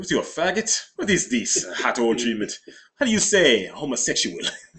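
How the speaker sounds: loud put-on French accent throughout. Speaker retells answering a man about a hot oil treatment: put-on french accent. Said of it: "speaking in my French accent".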